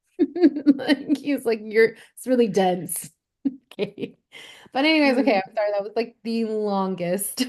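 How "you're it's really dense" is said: put-on British accent in a judge-like voice. Recalling only hearing Paul Hollywood's voice, doing a Paul Hollywood impression. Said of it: "all I could hear was like Paul Hollywood's like voice".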